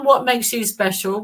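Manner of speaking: usual speaking voice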